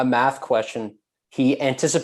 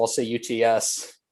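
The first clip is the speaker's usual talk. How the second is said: normal talking voice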